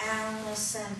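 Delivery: soft, flat, stationary, lifeless voice.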